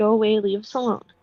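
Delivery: muttered under breath. A character hears laughing and chains nearby, muttering under her breath. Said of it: "just mutters under her breath".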